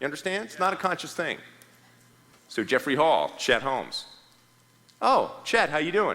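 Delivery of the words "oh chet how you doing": high, knowing tone of recognition. Showing how to greet a prospect on a sales call: tone of recognition. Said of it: "with a little bit of tone of recognition".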